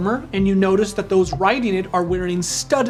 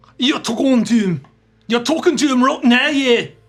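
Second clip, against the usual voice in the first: put-on northern English accent, higher pitch; 4 semitones higher, 3 dB louder than usual. Voicing the rider who threw a spear at the party's feet: northern English accent. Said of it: "make it a northern English".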